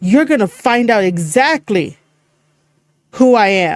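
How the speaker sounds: choppy, broken-up wrestling promo cadence with dramatic pauses. Explaining wrestling promo cadences, demonstrating one: promo cadence with dramatic pauses. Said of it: "Like those kind of pauses and whatnot".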